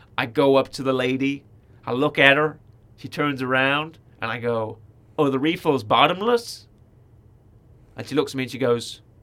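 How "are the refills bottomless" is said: attempted, put-on American accent. Retelling asking a cafe server about refills: imitating own attempt at an American accent. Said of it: "in my American accent".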